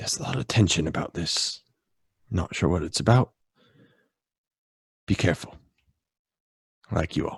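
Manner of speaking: soft, quiet, confiding whisper. Voicing a character leaning over to warn someone: whispering quietly. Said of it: "leans over and whispers kinda quiet to you".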